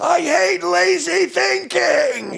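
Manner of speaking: mock very high, very slow, ragged, rough screaming. Retelling a man dragged out of a bar by bouncers, retelling him screaming.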